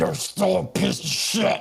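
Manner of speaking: gurgling dying voice. Voicing a stabbed character's last words while gurgling: dying, gurgling last words. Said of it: "he falls to the ground gurgling".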